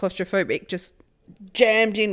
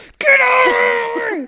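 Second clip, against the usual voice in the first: high, loud, slow angry shout. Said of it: "then I start being like".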